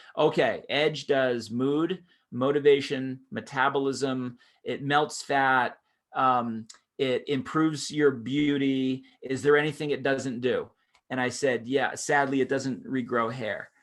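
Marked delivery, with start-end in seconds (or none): none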